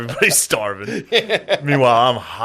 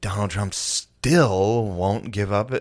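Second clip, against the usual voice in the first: acted, slow newscaster tone with snippy attitude. Retelling how a radio newsreader broke her usual tone, as a mock-snippy NPR lady. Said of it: "this lady like broke it and was like".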